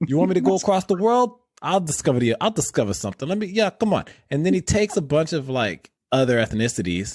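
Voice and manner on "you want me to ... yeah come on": put-on Italian American Brooklyn accent, pitched a bit high. Riffing with another speaker, voicing Christopher Columbus with a Brooklyn accent. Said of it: "Christopher Columbus with his Brooklyn accent".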